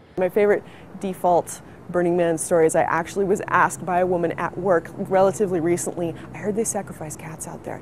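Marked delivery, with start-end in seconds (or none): 6.4-7.8 put-on deadpan, dead serious, much quieter, lower. Retelling what a woman at work asked about Burning Man, retelling a deadpan serious line. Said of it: "like deadpan serious".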